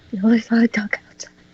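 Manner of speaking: fast, unvoiced whisper. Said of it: "I just whisper myself".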